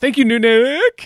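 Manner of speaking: high, slow, grand delivery.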